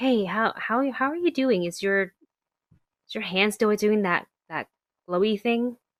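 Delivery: discreet, secretive manner. Player's character scoots over to Azara with French toast, hushed tone. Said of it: "in a more hushed tone".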